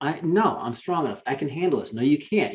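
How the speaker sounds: usual speaking voice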